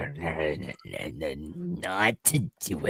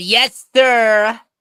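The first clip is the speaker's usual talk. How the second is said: very loud, very high, shrill yell; 11 dB louder than usual. Answering the teacher in character after being scolded: yelling in character. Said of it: "And now yelling in my classroom?".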